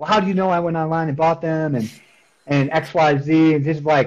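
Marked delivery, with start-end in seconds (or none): 0.0-1.7 irate, angry, accusing woman yelling. Retelling a phone call where a woman yelled at them: imitating a woman yelling. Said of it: "yelling at me".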